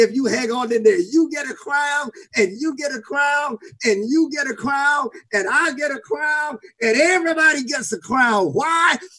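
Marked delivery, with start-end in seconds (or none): 1.0-6.6 high, excited, exuberant shouting. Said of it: "like Oprah".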